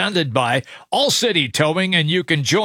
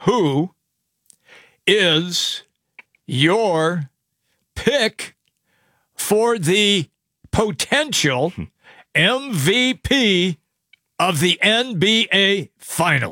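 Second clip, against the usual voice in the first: very slow, deliberate, halting, broken into pieces. Speaker reading a question aloud as asked, speaking slowly. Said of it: "I'll do it slowly".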